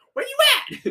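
pitched way up, loud. During a chat about a talking donkey, a speaker does a Donkey impression. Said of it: "Is that your Eddie Murphy Impression?".

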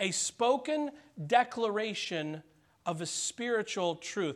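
extra stress placed on the word spoken.

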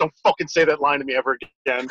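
mock deadly earnest, dead serious, no laughing at all. Retelling a friend's reply to a teased line: imitating a dead serious warning. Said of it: "and he would dead serious".

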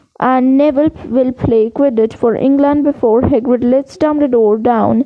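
ordinary delivery

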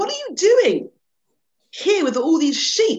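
very high, loud, insistent, demanding tone. An old lion questions a young one among the sheep, demanding. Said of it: "the old lion demanded".

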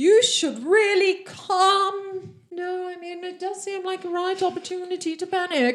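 loud, calm, drawn-out shout in an elf voice. Voicing an elf shouting to the whole group: shouting. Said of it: "the elf shouts".

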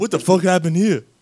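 badly done celebrity voice, loud, high, belted out. Joking about him ending up in Detroit, O.J. Simpson impression. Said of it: "my O J impression".

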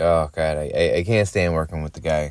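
normal talking voice

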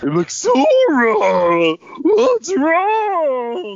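very high-pitched, swooping, eerie creepy clown voice. Complaining about a disliked character's voice, in a creepy clown voice. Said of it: "you sounded like a creepy clown right now".

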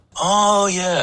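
put-on light Yiddish accent, pitched very high.

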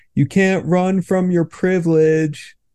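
put-on high, taunting, jeering shout. Retelling what a passing dude on the street shouted: imitating someone shouting. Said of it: "he just shouts at me".

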